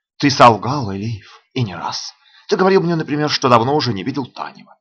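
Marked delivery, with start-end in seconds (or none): none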